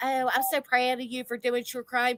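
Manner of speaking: play-acted patronizing, belittling, condescending tone. Retelling how he interrupts her true crime: imitating a demeaning remark. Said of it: "that fucking demeaning".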